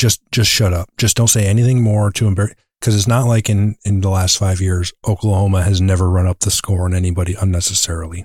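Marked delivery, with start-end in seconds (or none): none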